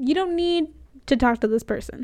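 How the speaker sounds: ordinary talk, nothing marked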